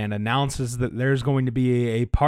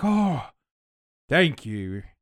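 put-on old village elder voice; 3 semitones higher than usual. Voicing the town elder Erengard thanking the party: Erengard voice. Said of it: "Now he sounds like that".

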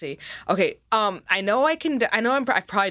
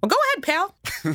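very high-pitched cartoon-style voice; 12 semitones higher than usual. Playing a cartoon mouse answering another speaker: Mickey Mouse voice. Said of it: "Say, Mickey".

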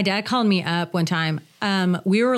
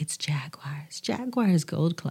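commercial voiceover, radio ad announcer voice; 3 semitones lower, 6 dB quieter than usual. Retelling a strip club ad once voiced: commercial voiceover voice. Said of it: "And so I did the voiceover".

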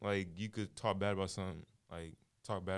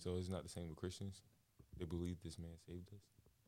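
hushed, under-the-breath half-whisper; 7 dB quieter than usual. Speaking during a group conversation, half-whispering. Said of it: "Why are you whispering?".

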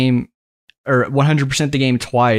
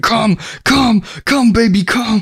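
put-on very high, stretched-out, drawn-out scream; 10 semitones higher than usual. Retelling a famous clip from an A S M R video: imitating a guy screaming. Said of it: "the guy screaming".

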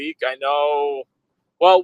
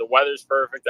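usual speaking voice

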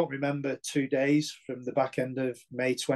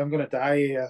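ordinary talk

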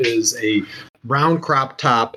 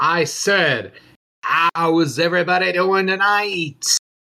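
higher-pitched arena ring announcer voice, crowd-rousing; 6 semitones higher than usual. Voicing an announcer addressing the crowd at the ring center: ring announcer voice. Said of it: "an announcer comes out to the center of the ring".

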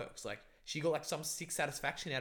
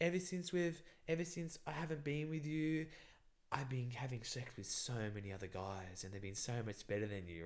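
sultry, seductive, taunting voice with a cutting edge; 4 dB quieter than usual. Retelling a woman's hurtful words in bed: imitating a seductive voice. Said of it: "getting really seductive with her voice".

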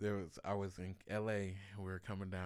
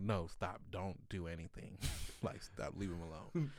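usual speaking voice

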